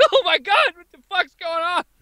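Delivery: very high, losing-it, freaked-out panic. Retelling own reaction to a stranger's outburst: imitating own panic. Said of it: "I'm losing my mind".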